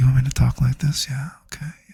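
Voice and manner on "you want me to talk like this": soft, gentle, close half-whispery asmr voice. Offering the audience a quick sample of his special voice, teasing them into donating, in an ASMR voice. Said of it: "use my A S M R voice".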